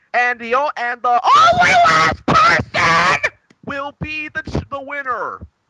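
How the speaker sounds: very high, loud, shrill swooping screech like dying bird. Retelling a wrestler's promo line: screeching like a dying bird, imitating Gail Kim. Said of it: "she screeched like a dying bird".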